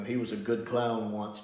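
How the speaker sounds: ordinary talk, nothing marked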